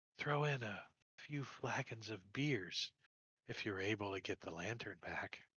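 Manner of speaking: low, very quiet half-whispered aside. A game master voices a character bargaining with the players, half-whispering to them. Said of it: "and she whispers to you".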